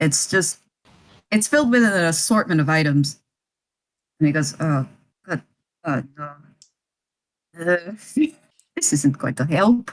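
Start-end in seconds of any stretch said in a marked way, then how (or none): 4.6-9.9 very quiet, hushed, barely audible murmur. Retelling what an invisible character says in the story, very quiet. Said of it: "he's saying this very quietly".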